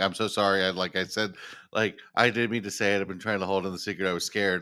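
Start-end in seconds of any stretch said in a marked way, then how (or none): none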